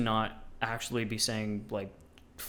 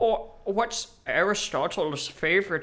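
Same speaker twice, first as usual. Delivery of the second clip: put-on German-sounding accent, high-pitched and loud; 8 semitones higher, 5 dB louder than usual. Joking about Aristotle's time, the speaker tries a German-sounding put-on accent. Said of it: "is this German?".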